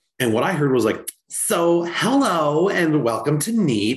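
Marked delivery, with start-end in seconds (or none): 1.3-4.0 put-on very slow, drawn-out, swooping Valley Girl drawl. Retelling how the server greeted the table, in a Valley Girl accent. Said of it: "had this whole Valley Girl thing going on".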